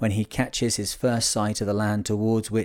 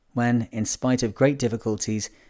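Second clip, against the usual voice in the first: ordinary delivery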